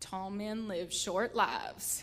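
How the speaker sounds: put-on deep, low old-West voice. A mother retells her daughter replying to her tall son, deep Western voice. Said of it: "musters up like this deep Western voice".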